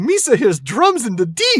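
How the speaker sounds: very high, shrill, swooping, goofy alien voice. Having suggested Jar Jar as Pippin, play the part in a Jar Jar voice. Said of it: "I kind of think Pippin should be Jar Jar".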